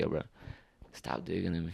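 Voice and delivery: very quiet, low, hushed, earnest, serious tone. Retelling pulling a boss aside at work: imitating own mock-serious tone. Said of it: "I made it look all serious".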